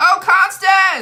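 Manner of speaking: full-throated shriek, very high and very loud. Noticing a donation during a live stream, calling out the donor: yelling. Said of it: "and I'm yelling".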